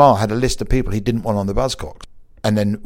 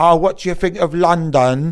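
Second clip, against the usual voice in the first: fake English accent, pitched up; 6 semitones higher than usual. Retelling how someone in a documentary mocked journalists in England: put-on English accent. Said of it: "he did this English accent".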